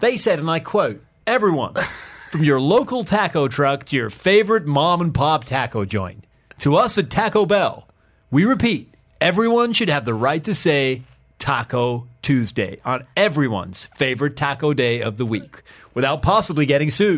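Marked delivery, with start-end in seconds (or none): 1.3-17.2 put-on American accent. Speaker quotes a petition statement, in an American accent. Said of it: "I think that was your best American accent effort ever".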